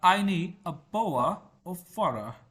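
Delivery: British English accent with the t in bottle dropped. Explaining how British speakers differ from Americans, demonstrating a British accent. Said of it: "ब्रिटिश जो है उनका एक्सेंट थोड़ा डिफरेंट है".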